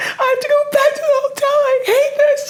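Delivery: very high, drawn-out, sobbing, screaming wail. Retelling a phone call that sent someone back to quarantine: imitating Maddie bawling and screaming. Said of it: "bawling, crying, ... Just screaming".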